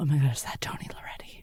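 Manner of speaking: loud, breathy stage whisper that carries. Retelling spotting a photo teacher in the water: imitating a loud whisper. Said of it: "whispering so loudly".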